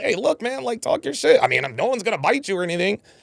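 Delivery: playful teasing, acted. Retelling what a man said to a woman on a show: mock-playful teasing. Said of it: "the way he said that she contradicted herself was very playful".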